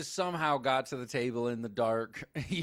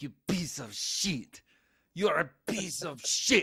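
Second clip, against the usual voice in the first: obnoxious, put-on French accent; 4 semitones higher than usual. Retelling a film scene about a man peeing in bushes, Diedrich Bader's obnoxious French accent. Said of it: "Like this obnoxious French accent".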